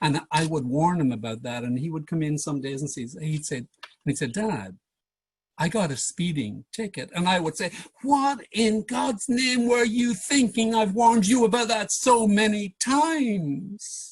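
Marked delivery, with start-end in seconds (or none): 8.0-14.1 pitch pushed way up, drawn out, deliberate. A father retelling his reply to his son's speeding ticket, retelling his own raised pitch. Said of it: "Great example of pitch".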